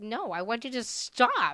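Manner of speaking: loud, pretend-angry, fed-up cat voice. Speaking for a cat that is offered a treat: voicing the cat, mock mad. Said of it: "He's like".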